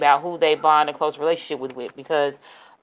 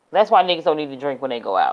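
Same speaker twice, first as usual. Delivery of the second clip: normal talking voice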